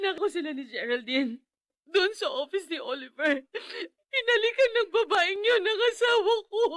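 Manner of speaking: sobbing, tearful speech. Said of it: "Bakit ka umiiyak?".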